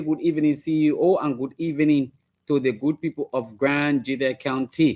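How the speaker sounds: ordinary delivery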